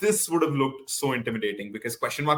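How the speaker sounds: ordinary talk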